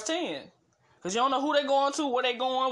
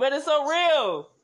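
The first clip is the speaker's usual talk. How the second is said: loud, emphatic raised-voice yell; 2 semitones higher, 4 dB louder than usual. Addressing the audience while preparing tea, yelling. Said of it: "I don't mean to yell".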